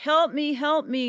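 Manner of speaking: slow, loud, high, drawn-out calling-out yell. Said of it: "they hear him yelling".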